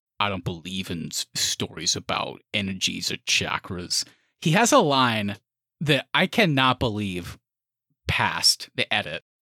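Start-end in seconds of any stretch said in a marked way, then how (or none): 0.2-4.1 put-on assumed American accent. Quoting a Doctor Strange line as an impression: Benedict Cumberbatch American accent. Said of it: "I love doing impressions of Benedict Cumberbatch's American accent".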